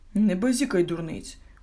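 indignant. Narrator voicing the father answering the mother's excited claim, indignant. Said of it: "обурився мумі-тато".

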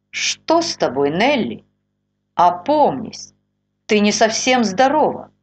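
chilly, cold tone. A husband walks in unnoticed and speaks to his wife: cold tone. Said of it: "Холодным тоном заговорил".

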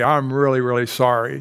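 usual speaking voice

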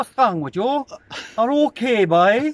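Irish Kerry accent. Showing how the Kerry fellas talk: imitating a Kerry accent. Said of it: "the likes of the Kerry fellas".

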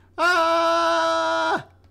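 thrill scream. Speaker doing an impression of riding a roller coaster: roller coaster scream. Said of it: "My impression of being on a roller coaster".

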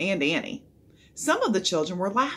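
ordinary delivery

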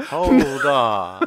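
very sultry voice. Voicing Conrad, stepping into a standoff: sultry Conrad voice. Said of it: "That's a very sultry voice".

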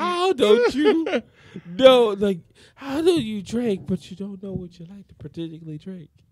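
sad, pleading tone. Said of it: "like, sad".

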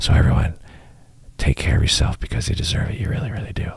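soft asmr delivery. Signing off to listeners late at night: playful ASMR-style voice. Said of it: "I'll do some A S M R".

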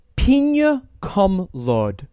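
slow, drawn-out, stretched-out delivery.

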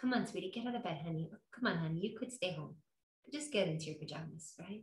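mock very hushed, very soft, sweet, gentle coaxing. Illustrating how the voice of god will be sweet: sweet, encouraging voice. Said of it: "It will encourage us. It will be sweet".

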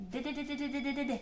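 very fast rattled-off string of de syllables, tapping rhythm. Showing a learner how to tap out a rhythm faster, very fast de-de-de. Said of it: "А тепер давай спробуємо ще швидше стукати. Ось так".

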